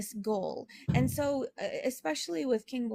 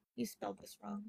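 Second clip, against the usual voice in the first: mock fed-up, exasperated tone with sighing; 11 dB quieter than usual. Retelling how he looked at the speaker and answered: imitating an eye-rolling remark. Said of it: "eye roll style".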